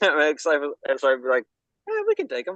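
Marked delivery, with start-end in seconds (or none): 1.9-2.6 nonchalant put-on cartoon hero voice, higher. Acting out Slifer in the imagined Goku voice: Goku voice, nonchalant. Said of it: "if you're giving Slifer the Goku voice".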